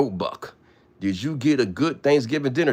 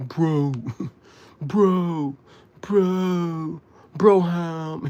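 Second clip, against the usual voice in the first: put-on annoyed, very slow, "bro" stretched out; 6 semitones higher than usual. Mocking TY, who is mad, acting out how he reads it: mock-angry TY reading. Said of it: "He mad. T Y mad. He really reading it like this".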